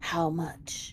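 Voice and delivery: hushed stage whisper, spoken as an aside. Stepping away from the door, Vin asks you privately, in a stage whisper. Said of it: "kind of in a stage whisper to you says".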